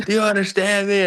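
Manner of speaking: mock exasperated screaming, high. Retelling how Rhino got fed up and kept screaming: imitating Rhino screaming. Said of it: "He just kept screaming".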